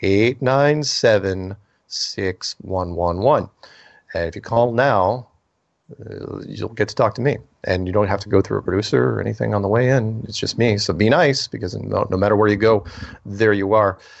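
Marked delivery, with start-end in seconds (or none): 0.0-3.5 slow, unhurried delivery. Host giving listeners the call-in phone number, saying it slowly. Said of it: "I'm going to say it slow".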